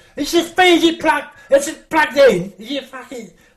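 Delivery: exasperated, annoyed shout, pitched high. Retelling a man on stage shouting backstage: imitating someone shouting. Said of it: "he's shouting in the curtains".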